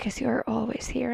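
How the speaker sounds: soft, serious, concerned, secretive whisper. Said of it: "like, really serious".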